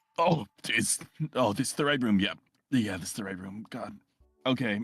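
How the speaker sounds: hungover morning-after voice, stumbling with fumbling restarts. Voicing a disheveled man who enters and finds the room: acting hungover. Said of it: "he looks very, I guess, almost hungover".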